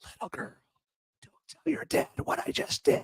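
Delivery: creepy, very hushed, whispered murmur. Doing a creepy whisper impression of Biden: creepy Biden whisper. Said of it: "As I do my creepy Biden whisper".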